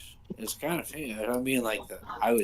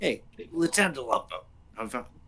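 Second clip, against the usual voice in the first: put-on middle-aged man voice; 3 dB quieter than usual. Calling out to a cop to ask directions: Peter Falk voice. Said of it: "my regular, uh, Peter Falk voice".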